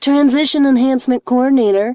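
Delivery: bright, chipper, cheerful tone. A coordinator answers a ringing phone, cheerfully. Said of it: "he said cheerfully into the receiver".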